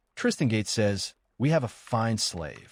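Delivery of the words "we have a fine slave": usual speaking voice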